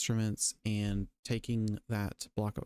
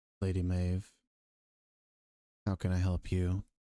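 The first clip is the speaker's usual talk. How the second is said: low, flat, lifeless dead monotone; 4 semitones lower than usual. Retelling how a character greeted her, in a very dead monotone. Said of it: "It's very monotone".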